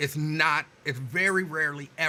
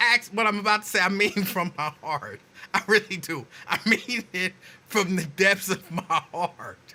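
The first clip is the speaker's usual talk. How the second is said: earnest, high, laughter breaking through the words; 5 semitones higher, 4 dB louder than usual. Speaker addresses Axe, trying to stay serious: laughing while talking. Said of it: "And I can't stop laughing".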